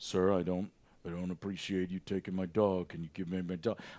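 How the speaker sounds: stoic, very low, level monotone. Mocking the idea of a calm hero asking for his dog: stoic Superman voice. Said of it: "Superman is stoic and he just kinda floats there and he's like".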